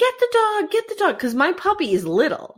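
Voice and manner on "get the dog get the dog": mock urgent, very high-pitched scream. Retelling a coyote scare, imitating someone screaming. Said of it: "I'm screaming".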